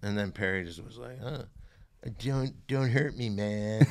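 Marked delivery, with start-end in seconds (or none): 1.2-3.8 slow, loose, drawn-out drawl. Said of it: "Doing, like, [name] and [name]".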